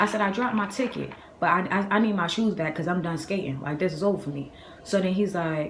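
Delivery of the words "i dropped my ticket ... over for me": usual speaking voice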